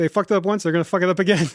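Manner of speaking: mock harsh, blunt delivery. Retelling what the other speaker said about the wrong sandwich, imitating a harsh retort. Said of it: "I don't think I said it that harshly".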